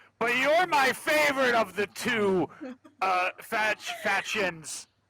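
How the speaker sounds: pointed tone projected so it carries. Speaking so Winter can hear through the door, said real loud. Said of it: "I'll say this real loud".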